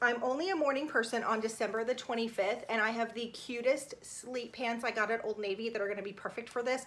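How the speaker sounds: ordinary delivery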